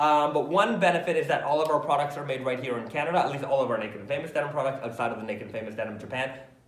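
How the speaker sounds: very fast, rapid-fire, rattled-off run-on speech. A speaker answering listeners about the company's stores and products, speaking very fast. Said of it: "I'm speaking very fast".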